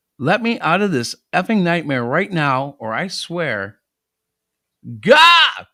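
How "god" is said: sudden high, loud cry. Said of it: "Sorry, that was loud".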